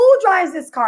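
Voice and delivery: play-acted, high, held-small scream. Retelling confronting people about a parked car: retelling a scream. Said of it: "I'm screaming".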